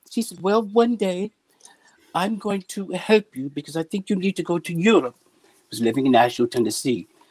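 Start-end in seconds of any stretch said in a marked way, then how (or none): 0.4-5.1 higher, lifted woman's voice. Retelling what Ursula said to him: imitating Ursula. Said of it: "I always do the voice".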